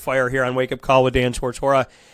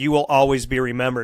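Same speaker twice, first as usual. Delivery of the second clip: usual speaking voice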